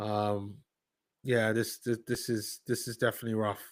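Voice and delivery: very hushed, quiet, deflated, disappointed murmur. Speaker on break reviewing how the game has gone, in a disappointed tone. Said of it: "as you can hear from the tone of my voice".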